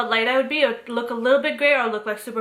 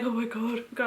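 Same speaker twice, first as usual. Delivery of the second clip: soft, scared, shrinking little voice; 8 dB quieter than usual. Retelling a hair-dyeing story, acting out being scared. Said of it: "my scary voice is so scary".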